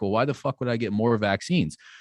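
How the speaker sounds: ordinary talk, nothing marked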